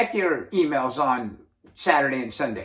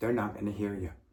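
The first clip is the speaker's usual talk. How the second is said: level, droning monotone with no inflection; 7 semitones lower, 11 dB quieter than usual. Explaining why people stop listening, demonstrating a flat monotone delivery. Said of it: "you're just monotone and you talk like this".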